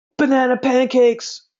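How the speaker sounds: mock, very high, loud, out-of-nowhere shout. Retelling what he yells at women at night: imitating his own yell. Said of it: "just yelling, like".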